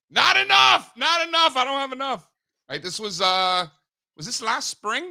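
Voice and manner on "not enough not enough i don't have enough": very high, raised near-scream blurt. Retelling how they answered someone whispering a question about their Bitcoin: retelling a scream. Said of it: "So I'm like screaming".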